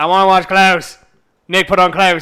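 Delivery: bored, listless, flat monotone. Retelling how Pete, bored, asked to watch Klaus: imitating Pete's tone. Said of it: "In that exact tone of voice".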